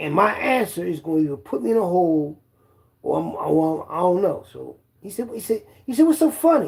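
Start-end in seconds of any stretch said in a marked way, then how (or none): 6.1-6.7 put-on hostile tone, higher pitch. Retelling a guard's question about laughing: imitating a guard's racist tone. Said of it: "In, like, a racist way".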